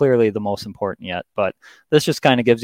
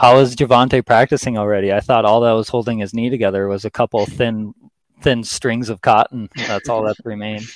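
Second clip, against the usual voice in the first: usual speaking voice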